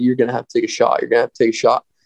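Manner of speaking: whispered delivery. Retelling urging a companion beside him to shoot: retelling a whisper. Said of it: "I was whispering to her".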